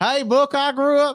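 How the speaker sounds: put-on southern drawl. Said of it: "a Southern accent there for a second".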